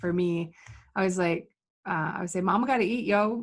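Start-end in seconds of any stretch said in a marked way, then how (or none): 2.4-3.4 sarcastic delivery. Retelling what you always say about getting paid: imitating own sarcastic line.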